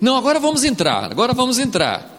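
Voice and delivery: high, fast, eager, insistent voice.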